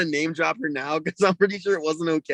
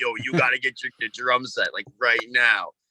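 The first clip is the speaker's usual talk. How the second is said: put-on low old truck driver voice; 6 semitones lower than usual. Retelling what the babysitter told the speaker's parents: old truck driver voice. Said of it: "Like an old truck driver?".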